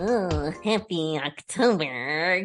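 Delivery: very low, put-on spooky voice. Host wishes listeners happy October at the end of an episode, in a spooky voice. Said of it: "Is that a good spooky voice?".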